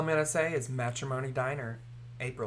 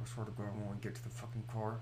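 put-on clenched-teeth talk, lower, quieter; 5 semitones lower, 11 dB quieter than usual. Imitating her mama in Walmart, talking through clenched teeth like a ventriloquist. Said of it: "talked through her teeth like she's a fucking ventriloquist".

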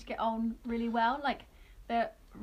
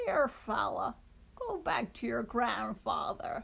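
mimicked female voice. Recalling a scene from something watched, imitating the lady's line. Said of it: "When the lady gives him the breadstick".

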